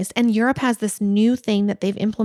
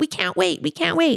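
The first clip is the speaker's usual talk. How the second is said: irritated, fed-up, high, rough griping voice; 7 semitones higher than usual. Retelling how the gate staff reacted while waiting: imitating irritated staff. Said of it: "they were so irritated".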